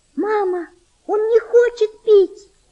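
shrill, very high, despairing outcry. A girl calls to her mother as a sick boy refuses water, crying out in despair. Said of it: "с отчаянием закричала девочка".

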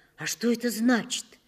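fearful, frightened. Hearing his mother's long new job title, her son asks, fearfully. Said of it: "я испуганно спросил".

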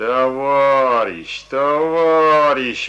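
very loud, reproachful call with "Товарищ" stretched out. A soldier calls to a student lagging behind them, reproachfully. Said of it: "укоризненно говорил ему солдат".

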